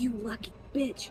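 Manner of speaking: quiet under-breath mutter. Imagining a woman looking over and reacting, muttering quietly under breath. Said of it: "just very quietly under her breath".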